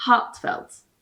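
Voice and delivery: "heartfelt" said in a British accent. Explaining how the word is pronounced, british accent heartfelt. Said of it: "It's pronounced as a British person would say heartfelt".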